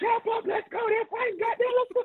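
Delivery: high-pitched coach character voice. Retelling a man rushing players out of the locker room, imitating his high-pitched voice. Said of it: "He has this high-pitched voice".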